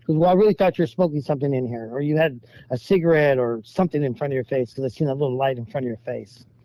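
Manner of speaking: ordinary talk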